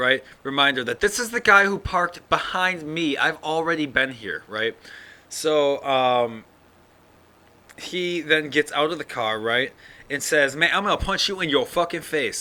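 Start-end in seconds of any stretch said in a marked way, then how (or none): 10.6-12.4 put-on angry, menacing voice, pitched up. Retelling the bus driver's threat after getting out: imitating a threatening driver. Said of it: "like that".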